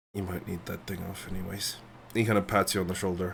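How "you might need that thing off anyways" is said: very quiet, private half-whispered aside. Voicing a character who leans down to one player: half-whispering in character. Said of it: "leans down towards you and whispers to just you".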